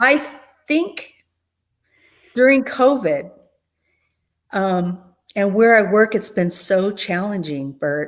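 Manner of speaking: holding back tears, near crying. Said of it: "tears are very surfaced for me lately".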